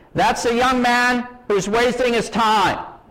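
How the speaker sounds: mock booming voice, very loud and high-pitched. Retelling a secretary's remark about him to another secretary, in a very loud voice. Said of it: "says in a very loud voice".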